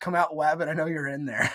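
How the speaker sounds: ordinary delivery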